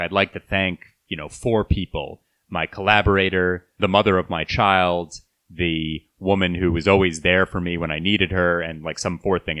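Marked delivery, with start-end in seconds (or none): none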